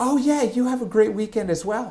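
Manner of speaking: put-on high, very feminine, girly voice. Retelling what a woman at the gym said back, in a very feminine voice. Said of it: "in a very feminine voice".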